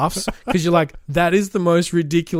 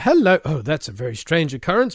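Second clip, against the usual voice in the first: plummy, swooping put-on posh upper-class voice. Speaker recounts the doorbell prank where Bandit comes out, in Bandit's put-on posh voice. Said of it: "puts on his posh voice".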